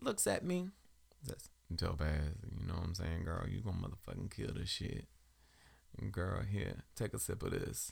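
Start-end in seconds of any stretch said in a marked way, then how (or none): 1.8-7.9 put-on rough, creaky, stoned-sounding voice. Retelling how a high friend offered a drink before going on stage: imitating Denzel high. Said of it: "with his high ass".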